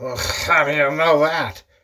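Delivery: put-on words smeared together in a drunken mumble. Telling a joke, acting out the drunk husband answering his wife, imitating a drunk slur. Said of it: "And he slurs".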